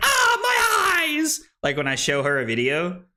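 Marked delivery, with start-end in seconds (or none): 0.0-1.4 cartoon-style very high cry, my drawn out. Retelling a partner reacting to a bright screen: imitating SpongeBob character crying "my eyes". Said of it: "she's like the, the guy from SpongeBob".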